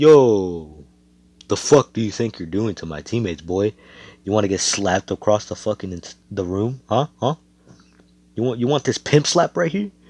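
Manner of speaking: acted menacing, confrontational man's voice. Telling a story, quoting a man confronting someone over his teammates, retelling a threat. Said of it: "He's like".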